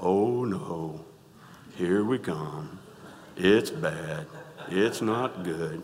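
very low, mopey, gloomy donkey voice. Talking about a favourite Winnie the Pooh character; Eeyore voice. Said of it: "Eeyore is".

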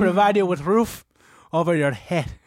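odd, weird put-on old-world monk voice. Listing to a co-host what is provided for them: weird Al Pacino monk voice. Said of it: "This weird Pacino monk is not cutting it".

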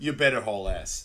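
ordinary talk, nothing marked

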